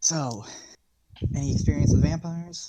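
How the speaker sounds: hushed, quiet tone. Playing your character in a role-play, you comment to another character: hushed tone. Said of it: "kind of like in a hushed tone".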